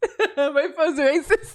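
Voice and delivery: high-pitched, laughing delivery.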